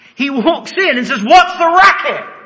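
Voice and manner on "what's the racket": loud, high-pitched calling voice. Acting out Jesus entering the loud mourning room: loud so everybody can hear. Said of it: "so everybody can hear".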